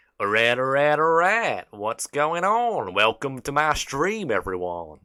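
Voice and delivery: loud, swooping, animated American accent. Showing the best accent they can do, in Matthew McConaughey American accent. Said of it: "that is legitimately the best American accent I can do".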